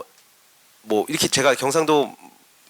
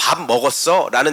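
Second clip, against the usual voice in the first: normal talking voice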